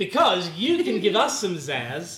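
loud, slow, sweeping, pumped-up hype.

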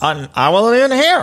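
nervous, unconvincing voice shooting up very high. Retelling own lie to someone asking about food: imitating own voice going up while lying. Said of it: "my voice goes up".

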